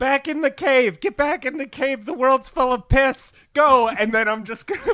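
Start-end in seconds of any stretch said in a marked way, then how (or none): 0.0-3.9 loud, high-pitched, full-tilt yelling. During a tabletop game, a player's character runs off yelling. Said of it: "and I'm I'm yelling".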